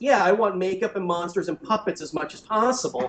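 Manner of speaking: ordinary delivery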